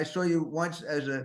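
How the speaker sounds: usual speaking voice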